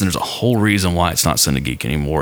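ordinary delivery

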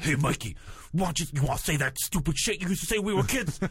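creepy, pushed, straining, effortful voice. Imitating a man addressing Mikey, imitating a strained voice. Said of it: "it sounded just like".

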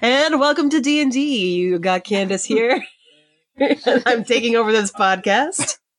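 radio announcer delivery. Candace takes over the podcast introduction; announcer voice. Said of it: "Putting on your announcer voice".

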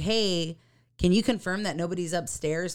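ordinary delivery

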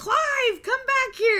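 very high, shrill, loud scream. Retelling how she called the hawk back, imitating someone screaming. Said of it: "she's just scre-".

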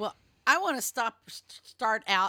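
stumbling over words. Answering the first question in a group talk about self-care, stuttering. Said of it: "I'm all stuttery today".

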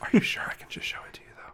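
acted whisper. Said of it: "I'm trying to whisper".

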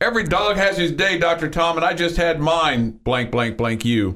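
mock very high, jubilant yell of pure delight. Retelling standing up at a game and screaming at a coach: retelling own scream. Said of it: "I stood up and I screamed".

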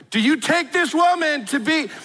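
high, slow, carrying, drawn-out acted shout. Retelling officiating a ceremony without a working mic: retelling a shout. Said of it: "I shouted at three hundred people".

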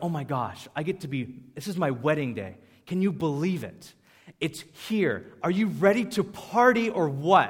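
mock giddy, over-the-moon, gushing excitement. Acting out a groom greeting a guest on his wedding day: imitating someone super excited. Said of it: "he's, like, super excited".

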